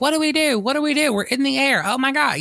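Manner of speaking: very high-pitched frantic total panic, acted out. Retelling a film scene where rich characters on a jet panic: imitating panicking characters. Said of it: "they were totally panicking".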